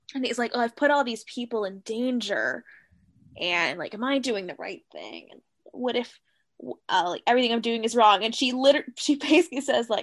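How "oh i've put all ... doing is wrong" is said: glum, self-doubting, mopey, downcast tone. Retelling a scene where Rip doubts himself: imitating mopey Rip. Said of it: "so he's being pretty mopey".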